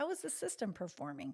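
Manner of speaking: normal talking voice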